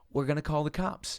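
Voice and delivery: ordinary talk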